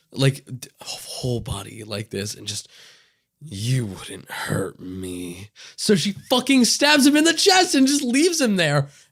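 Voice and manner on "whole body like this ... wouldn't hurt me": looming, menacing hush in a low, slow whisper. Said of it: "he, like, looms over her".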